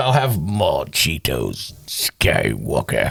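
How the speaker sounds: deep, very slow, lingering, swooping, drawn-out drawl. Explaining that ending sentences with Skywalker works, speaking in an Emperor voice. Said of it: "I want to talk like the emperor".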